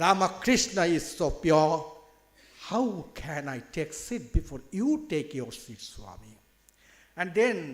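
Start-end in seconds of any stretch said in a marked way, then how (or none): none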